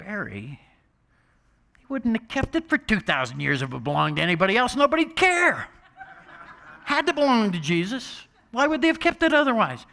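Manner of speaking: put-on very high, swooping, patronizing condescending voice. Retelling what a mother said to him, Barry: mock-condescending mother. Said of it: "in that condescending tone of voice".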